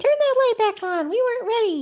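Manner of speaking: very high, put-on squawky complaining bird voice. Voicing the pet birds protesting the light being shut. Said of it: "They say".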